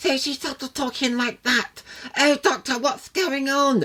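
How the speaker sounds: very high, put-on baby voice. Criticizing an actress's performance on the show, the speaker mimics her put-on babyish voice. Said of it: "she puts on this sort of babyish voice".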